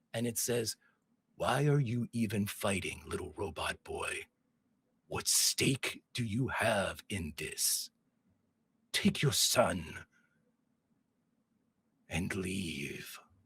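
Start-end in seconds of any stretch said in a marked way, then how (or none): 1.4-13.2 deep, slow multi-mouthed voice. George, surrounded by creatures, hears Gamorre speaking from every mouth. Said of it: "It seems to be coming from every mouth that's around".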